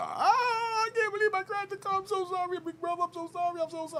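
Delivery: put-on, very high-pitched, frantic, panicked voice. Retelling how a young lady apologized after crashing his car, imitating panicked apology. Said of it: "she's panicking all in the hoopla".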